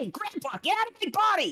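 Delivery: put-on indignant young character voice. Voicing a boy pushing a spirit out of his body: Mookie's indignant voice. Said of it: "half of his face morph back into the red and goes".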